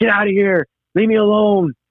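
very high, slow, drawn-out yelling. Recalling hearing a grandpa yell from the other room, imitating someone yelling. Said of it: "i hear my grandpa yelling like".

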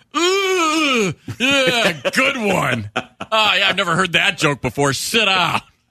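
slow, fake-impressed sarcastic drawl, ooh stretched out. Imitating a bus driver brushing off a kid's joke: imitating a sarcastic bus driver. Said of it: "turn around and look at some kid being a jerk and go".

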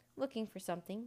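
ordinary delivery, nothing marked

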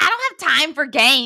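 put-on booming, loud, shouted Midwestern accent. Quoting a man's words while telling a story, Midwestern accent. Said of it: "it did sound super Midwestern".

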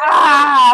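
loud, high, anguished scream.

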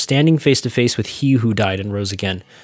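normal talking voice

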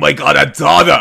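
very loud, croaky, rough heavy-smoker rasp. Showing how the Jennifer Coolidge smoker voice could have sounded: Jennifer Coolidge smoker voice. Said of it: "the smoker voice".

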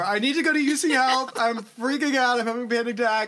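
mock frantic, high, panicked yelling. Retelling what she shouted at her Lyft driver on the highway, shouting in panic. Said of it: "shouting at my Lyft driver".

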